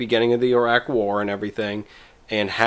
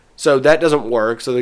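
normal talking voice

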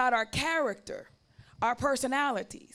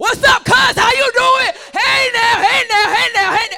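very loud, very high-pitched booming hollering; 11 semitones higher, 16 dB louder than usual. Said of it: "everybody loud".

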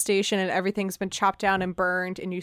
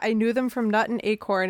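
normal talking voice

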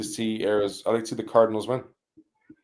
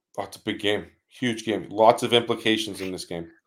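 ordinary talk

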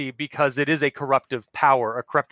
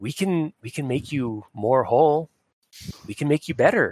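whispered spirit voice. Voicing Opal speaking inside a character's head: whispering in Opal's voice. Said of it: "you hear a whisper in Opal's voice".

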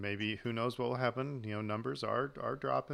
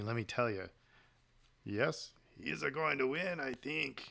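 put-on alien character voice. Speaker acting out Watto confiding to Qui-Gon: Watto impression. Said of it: "That's a pretty good impression".

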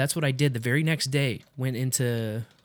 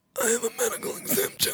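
ridiculous, weird, silly put-on voice, higher; 10 semitones higher, 3 dB quieter than usual. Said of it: "you say it in a weird voice".

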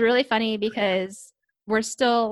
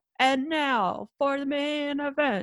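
very slow, drawn-out announcer call, pitched up; 5 semitones higher than usual. Mocking the announcers at a no-crowd event: loud announcer voice. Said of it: "the announcers are being super loud".

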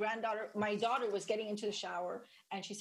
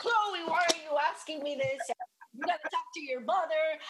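high, flustered, panicky freaking out; 7 semitones higher, 7 dB louder than usual. Retelling her husband's reaction to their daughter's question, imitating someone freaking out. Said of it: "he starts freaking out".

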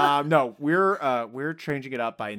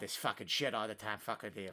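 bad fake Boston accent, lower, much quieter; 6 semitones lower, 15 dB quieter than usual. Speaker imitating a guy from boston who cursed all the time: bad boston accent. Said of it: "Your Boston accent sounds like a drunk leprechaun".

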